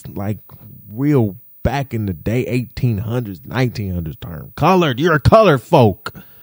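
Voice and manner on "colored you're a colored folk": mock-aggressive tone, faster. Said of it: "you said it so aggressive".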